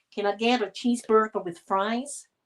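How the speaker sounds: attempted put-on American accent. Retelling being misunderstood ordering a cheeseburger, trying an American accent. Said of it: "I had to try my best in a bloody um, American accent".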